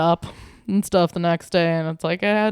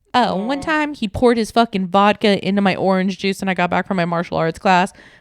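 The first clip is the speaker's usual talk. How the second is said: ordinary talk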